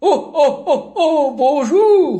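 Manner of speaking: fake cheerful elderly voice. Greeting a caller on the phone, in a Santa voice. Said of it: "c'est bien la voix du vieux barbu".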